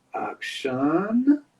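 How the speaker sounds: over-the-top, flamboyant German accent with high pitch. Having just switched accents, the speaker says it in a flamboyant German accent. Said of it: "a flamboyant German accent".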